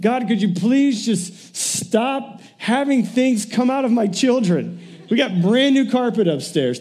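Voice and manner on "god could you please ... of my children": play-acted, begging, imploring pleading tone. Retelling a plea to God during a sick week: imitating pleading with God. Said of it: "I'm pleading with God".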